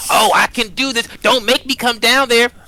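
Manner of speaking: put-on high shout. Mocking someone who hides from the water: imitating Olivine yelling. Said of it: "He just hides and yells".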